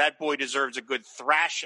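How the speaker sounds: normal talking voice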